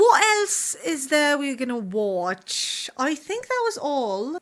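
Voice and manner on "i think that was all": sudden, random put-on British accent. Wrapping up the list of updates: random British accent. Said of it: "Sorry, guys, for the random, um, British accent".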